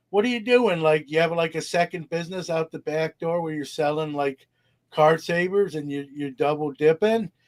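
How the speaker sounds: playful, joking, teasing ribbing tone. Retelling what he jokingly said to his rep on the phone, re-enacting a joking jab. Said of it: "jokingly said to my rep".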